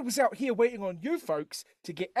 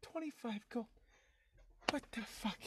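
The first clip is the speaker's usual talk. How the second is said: muttered under the breath, much quieter; 17 dB quieter than usual. A character leaving a police station speaks: muttered under his breath. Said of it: "under his breath".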